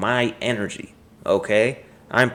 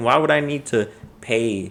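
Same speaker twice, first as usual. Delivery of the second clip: normal talking voice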